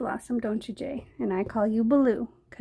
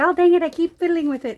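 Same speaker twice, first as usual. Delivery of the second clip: put-on cute, high-pitched, loud Australian accent; 6 semitones higher, 8 dB louder than usual. Recalling watching Julie Cuts fiddle with paint; Julie Cuts cute Australian accent. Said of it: "in her cute little Australian accent".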